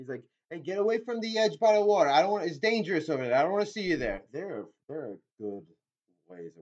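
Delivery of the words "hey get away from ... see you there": loud, high-pitched shouting. Retelling how a father character yells at the younger kids: imitating someone yelling. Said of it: "he's yelling at the other, uh, the younger kids too".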